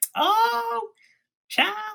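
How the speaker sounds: very loud, very high, shrill Southern lady voice.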